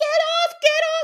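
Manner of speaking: very high-pitched, loud, stretched-out screaming. Mocking what bystanders yell at a fight: imitating people screaming. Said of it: "I hate when people just start screaming, like".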